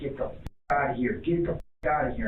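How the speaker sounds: ordinary delivery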